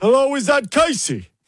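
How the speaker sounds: loud, very high-pitched voice, calling out. Phoning a listener as a prank, Al Pacino impression. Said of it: "it's been a long time since I've done a Pacino".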